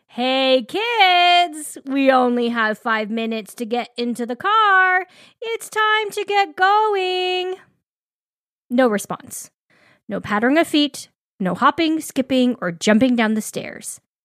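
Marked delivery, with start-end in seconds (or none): 0.2-7.6 put-on calm raised voice, rising, drawn-out "kids". Parent calling to kids who aren't responding, in a calmly raised voice. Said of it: "calmly raise your voice".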